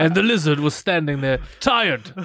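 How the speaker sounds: put-on elderly old man narrator voice. Narrating a lizard story after others ask for one: old man voice. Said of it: "we need an old man voice".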